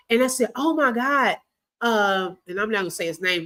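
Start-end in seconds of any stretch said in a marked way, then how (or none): 0.5-1.4 alarmed, worried, frantic and panicked. Retelling going to his mom's house when he did not come home: imitating own frantic voice. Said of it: "'cause I'm frantic".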